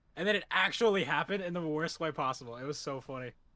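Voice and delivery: ordinary talk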